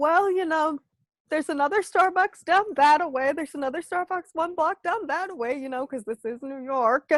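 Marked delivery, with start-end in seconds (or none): none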